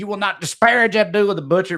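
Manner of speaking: mock half-shouted defiance. Recalling a grown man upset about wrestling, imitating someone yelling. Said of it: "I was him yelling".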